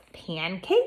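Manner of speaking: pancake with rising, question-like intonation. Announcing a poem title with a question mark, saying pancake with a rise. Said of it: "I said pancake with my voice going up at the end".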